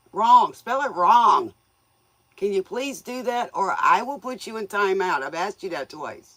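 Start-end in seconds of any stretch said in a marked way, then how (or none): 0.1-1.5 "wrong" stressed, said loud and slow. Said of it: "Unspell it right".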